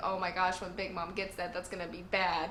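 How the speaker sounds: ordinary delivery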